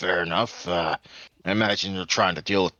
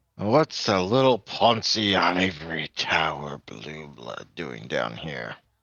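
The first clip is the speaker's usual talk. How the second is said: low, deep, barely veiled menacing voice; 3 semitones lower than usual. The narrator voices a stranger at the bar who claps a hand on a character, quiet, deep, almost threatening. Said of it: "says in a quiet but deep and uh, not quite threatening, but almost threatening voice".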